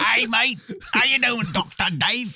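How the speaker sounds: bad Australian accent, high, loud. Greeting Doctor Dave with a hey mate, in a bad Australian accent. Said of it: "It's like a bad Australian accent".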